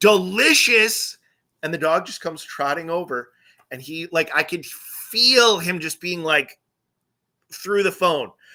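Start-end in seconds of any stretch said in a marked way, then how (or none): 0.0-1.2 mock outraged, incredulous, high, loud indignant tone. Retelling a friend's reaction on the phone: imitating an indignant friend. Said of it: "indignantly, he goes".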